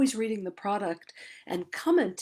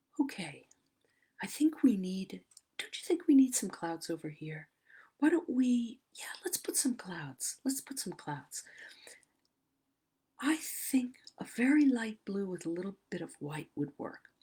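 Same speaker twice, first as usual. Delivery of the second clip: gentle, lulling, very soft, soothing teaching voice; 4 dB quieter than usual. Describing a landscape painter who teaches while he paints, imitating his very soft-spoken voice. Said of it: "very soft spoken, and he speaks like this".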